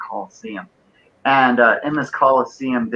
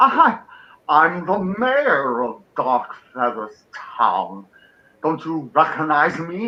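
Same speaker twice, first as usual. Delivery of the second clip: pompous, haughty, self-important fat dragon voice; 4 semitones higher than usual. Voicing a pompous dragon who is the town's mayor, indignant that someone fails to recognize him; pompous fat dragon voice. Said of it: "fat dragon. Really, really pompous".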